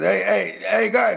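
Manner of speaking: very slow, drawn-out voice. Retelling what an uncle always said: imitating uncle Pete. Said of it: "He always says like this".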